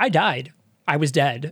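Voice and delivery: ordinary talk, nothing marked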